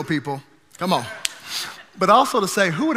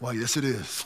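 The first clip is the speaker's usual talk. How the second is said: voice dropped way down, very low and very quiet; 8 semitones lower, 11 dB quieter than usual. Retelling answering a surprise phone call: imitating dropping voice real low. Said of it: "I immediately dropped my voice real low".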